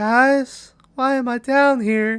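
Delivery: put-on high, bright-voiced girl, calling upward.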